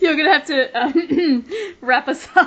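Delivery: talking through laughter. Asking the co-host to finish the episode: laughing while talking. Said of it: "I can't stop laughing".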